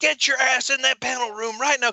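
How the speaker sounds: play-acted, shrill, very high angry yelling. Retelling how she cussed the speaker out in a hotel lobby, retelling an angry yell. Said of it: "She was yelling at me".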